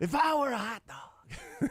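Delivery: very high, slow, drawn-out announcer voice. Doing the Will Ferrell impersonation of Harry Carey. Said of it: "the Will Ferrell impersonation of Harry Carey".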